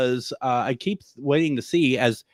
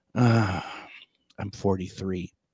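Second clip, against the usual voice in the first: put-on sighing voice, lower pitch; 4 semitones lower, 4 dB quieter than usual. Retelling a tired photographer's complaint: imitating a sighing photographer. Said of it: "every sentence starts with a, a sigh".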